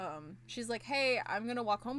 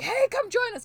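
very high, very loud, shrieking scream; 12 semitones higher, 10 dB louder than usual. Retelling a scene where a gang man invites someone over: imitating a man screaming. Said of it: "'cause he's screaming".

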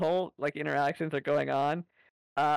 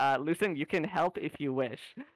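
plain

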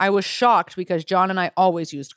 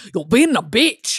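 Scottish accent, put on; 4 semitones higher, 4 dB louder than usual. Showing how different accents would say an insult, scottish accent. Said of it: "Scottish is like".

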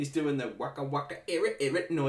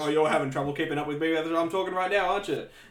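put-on sassy announcer voice, sassy tone; 2 semitones higher, 4 dB louder than usual. Retelling how the announcer teased the stenographer: imitating a sassy announcer. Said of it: "the announcer just absolutely sasses this".

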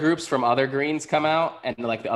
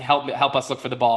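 ordinary talk

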